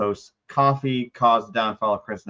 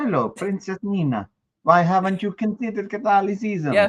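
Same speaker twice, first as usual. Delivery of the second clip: put-on speaking with Italian accent; 7 semitones higher than usual. Voicing an imagined little guardian angel, in an italian accent. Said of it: "why is my angel Italian?".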